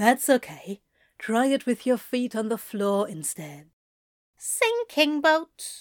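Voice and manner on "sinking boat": thoroughly self-satisfied, proud, pitched-up voice. Xerophil makes a declaration, thoroughly proud of himself. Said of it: "sounding thoroughly proud of himself".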